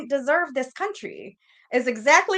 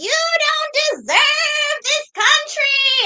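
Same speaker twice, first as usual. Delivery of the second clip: put-on very high, slow, loud yell, words drawn out; 6 dB louder than usual. Retelling what a teacher said after closing the door: imitating someone yelling. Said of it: "she starts shaking and yelling at me".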